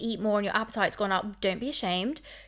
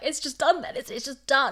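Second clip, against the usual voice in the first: put-on high, tearful bawling through the words; 5 semitones higher than usual. Retelling a breakup with a boy, imitating own past crying. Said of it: "And I'm like bawling my eyes out".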